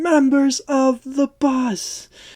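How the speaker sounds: very high, slow, drawn-out screaming. Retelling a film scene where a character screams at a bus: imitating Mia Goth screaming. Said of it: "screaming at him while he's on the bus".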